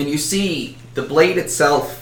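ordinary delivery

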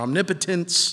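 omnipotence with the stress on nip. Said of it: "however you want to put the emphasis on what syllable".

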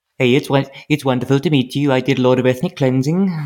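put-on Welsh accent. Imitating a villain's non-threatening line for laughs: put-on Welsh accent. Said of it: "He's Welsh now".

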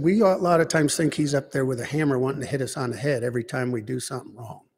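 ordinary talk, nothing marked

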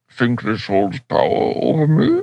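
muffled villain voice. Showing how to do the Bane voice by covering the mouth, muffled Bane voice. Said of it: "That's how the Bane voice works".

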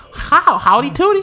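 very high put-on caricature voice. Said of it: "It's gonna sound a little bit like".

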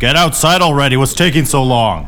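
big booming distant voice. The game narrator voices someone outside calling the players, in a booming voice. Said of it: "You hear a booming voice from outside".

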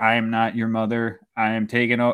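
flat, monotone, mechanical robot voice. Acting out the speaker's mother suddenly talking to her kids like a robot. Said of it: "just start talking like a robot".

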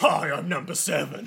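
really deep baritone voice. Joking about how one of the characters should have sounded: really deep baritone voice. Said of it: "One of them should have just had a really deep baritone".

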